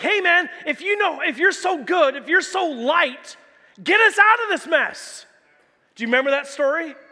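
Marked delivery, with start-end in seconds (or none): 0.0-5.3 higher-pitched, scolding, mocking jeer. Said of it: "scolding and mocking him".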